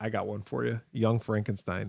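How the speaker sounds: ordinary talk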